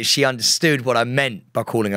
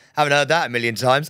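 ordinary delivery

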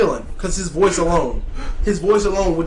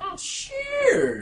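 high, swooping, menacing, sinister villain voice; 13 semitones higher, 6 dB quieter than usual. Answering a request to see the combo list, in a sinister voice. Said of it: "I never heard somebody talk so sinister".

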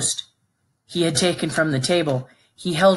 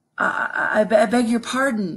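very slow, halting, winded, embarrassed stammer, pitched up; 6 semitones higher than usual. Narrating a man apologizing after nearly running over a monk, stammering, out of breath, embarrassed. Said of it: "Nick stammered out of the breath, embarrassed".

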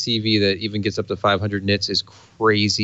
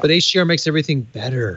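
light sarcasm, pitched up, offhand throwaway delivery; 5 semitones higher than usual. Talking about gaming desktops, the speaker throws in a slightly sarcastic remark. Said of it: "I said slightly sarcastically".

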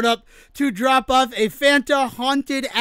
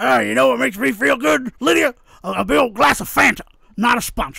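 rough, creaky character voice. Joking about the movie drinking Fanta, doing a Beetlejuice impression. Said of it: "that's an interesting Beetlejuice impression".

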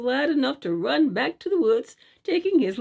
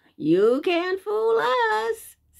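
very high, slow, laughing, taunting voice; 9 semitones higher than usual. Johnny Bushytail answers the shaggy bear creature, laughing. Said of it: "said Johnny Bushytail with a laugh".

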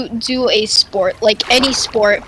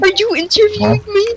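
play-acted, very high, tearful sob and whimper; 9 semitones higher than usual. Imitating someone who cried after being asked one question: imitating Noah crying. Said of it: "he starts crying, and he's like".

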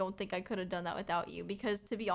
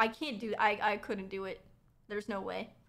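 plain

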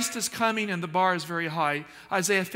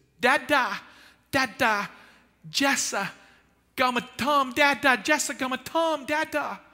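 put-on very slow, high toddler babbling; 7 semitones higher than usual. Father repeating what his oldest son said as a baby, in baby talk. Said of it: "he said in baby talk".

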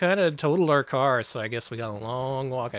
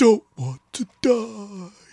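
loud, very high-pitched squealing gamer voice; 10 semitones higher, 6 dB louder than usual. Hosts joking about what gamers are like, doing a gamer impression. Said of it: "the voices are so funny to me".

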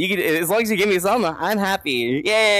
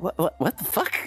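put-on breathy, bewildered whisper; 7 dB quieter than usual. Imagining a stranger's reaction after being sworn at: imitating a confused person. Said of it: "They'll be very confused".

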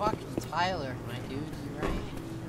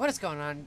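reluctant, unenthusiastic, sounds like not wanting to be there. Opening a gameplay recording: sounding like i don't wanna be here. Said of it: "like I don't wanna be here".

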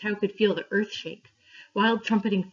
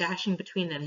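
ordinary delivery

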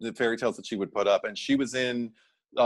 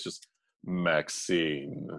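very deep, soft, mannish put-on bass voice; 6 semitones lower, 4 dB quieter than usual. Retelling a woman answering a male cop who called her max, very deep voice. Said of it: "says in a very deep voice".

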